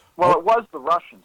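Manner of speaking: ordinary talk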